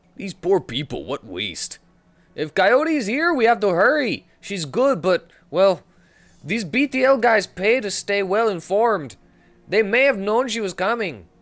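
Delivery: put-on Mexican accent. Narrator voicing a character's lines in a game scene, bad stereotypical Mexican accent. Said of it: "My stereotypical Mexican accent is terrible".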